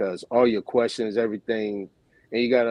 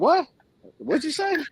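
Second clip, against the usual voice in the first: tiny, very high little soprano voice. Retelling being caught off guard by the others, in a little soprano voice. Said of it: "I got to my little soprano voice".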